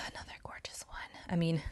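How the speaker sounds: hushed whisper. Describing a flaky nail polish, the speaker catches themself whispering. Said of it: "I don't know why I'm whispering".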